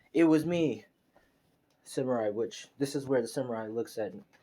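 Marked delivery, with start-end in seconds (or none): none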